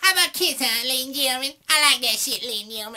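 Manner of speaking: mock high stage voice.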